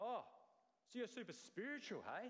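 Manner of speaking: scornful, sarcastic, high and swooping. Speaker retells how the apostle goes on to mock them, acting out sarcastic mockery. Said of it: "begins to sarcastically mock them".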